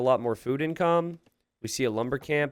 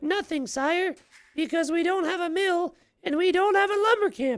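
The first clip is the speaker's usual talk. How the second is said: very high, clumsy, bad put-on woman's voice. Streamer voicing a game character answering her sire: bad female voice. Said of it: "That's probably what she sounds like".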